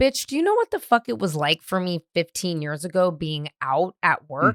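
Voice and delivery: ordinary talk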